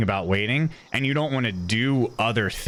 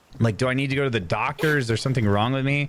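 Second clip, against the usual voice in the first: usual speaking voice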